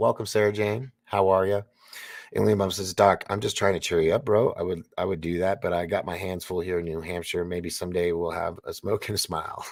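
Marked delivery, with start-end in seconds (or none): none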